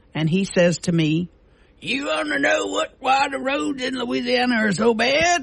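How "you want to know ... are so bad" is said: mock tipsy, pitched-up, drunk-sounding voice. Retelling what a man said to her one tipsy evening, imitating his drunken voice. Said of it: "that was his drunken voice".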